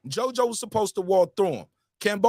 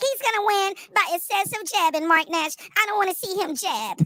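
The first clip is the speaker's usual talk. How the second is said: very high, mocking, whining voice; 11 semitones higher than usual. Mocking YouTube viewers who complain about a boxer, in a mock whining voice. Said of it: "let me give you your bitch ass whining voice".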